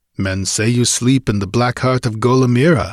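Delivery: ordinary delivery, nothing marked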